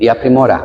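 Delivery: plain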